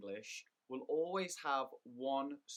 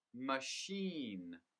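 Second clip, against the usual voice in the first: machine with the stress on -chine. English lesson on word stress, saying machine with stress on chine. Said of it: "the stress is on the second syllable".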